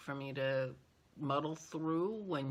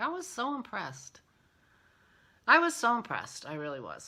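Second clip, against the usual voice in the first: high, swooping, teary voice choking up; 6 semitones higher, 7 dB louder than usual. Recalling how impressed they were by her, getting teary. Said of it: "I'm getting teary now thinking about it".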